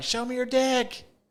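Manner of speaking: mock piercing yell, very high and shrill. Retelling what a woman yelled at a boy band show: retelling a yell. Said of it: "she's yelling like".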